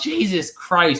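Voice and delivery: mock-mad, exasperated, high-pitched angry yell. Retelling losing a video game many times and throwing the controller: imitating own angry yell. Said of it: "threw my controller and yelled".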